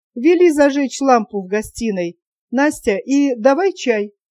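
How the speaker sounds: ordinary delivery, nothing marked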